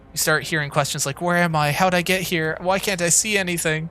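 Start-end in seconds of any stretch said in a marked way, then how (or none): 1.3-3.9 put-on slow, panicking, frightened little girl voice. Describing the questions a girl starts asking, imitating a panicked girl. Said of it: "girl sounds panicked".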